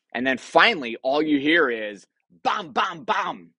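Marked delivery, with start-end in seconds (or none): none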